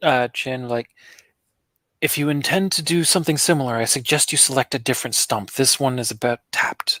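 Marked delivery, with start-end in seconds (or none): 2.0-7.0 soft, quiet, hushed whisper. Speaking in character to another character about the stump: whispered quietly. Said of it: "Whispered quietly".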